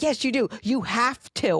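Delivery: mild, insistent, pushy half-yell. Retelling how the mother leaned over the tub: imitating mother yelling. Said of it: "She's yelling at me".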